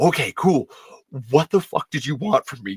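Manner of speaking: put-on scared, fearful voice. Retelling own reaction when called over by Renee: retelling being scared.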